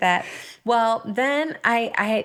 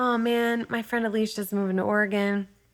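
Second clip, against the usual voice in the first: ordinary talk, nothing marked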